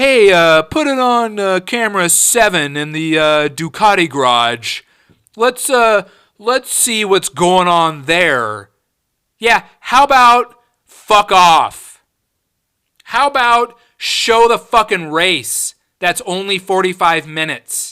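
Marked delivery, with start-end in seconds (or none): 0.0-8.7 clueless, dim, halting director-like delivery. Mocking a race director who cuts to the garage: mocking an idiot tv director. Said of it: "some idiot director in a booth somewhere".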